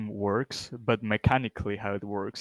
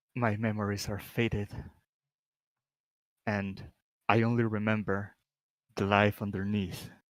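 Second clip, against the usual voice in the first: ghost character voice. Answering a player's question in character as the ghost: voicing a ghost. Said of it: "the ghost would answer".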